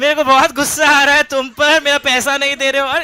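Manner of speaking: loud, high-pitched anger mixed with giggling. Speaker demonstrates how a woman might voice anger, saying angry words while laughing. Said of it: "हंस हंस के".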